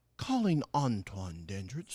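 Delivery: put-on voice assistant announcement in a German accent. Retelling a car call, imitating the phone assistant's reply: imitating German-speaking Siri. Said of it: "the German-speaking lady".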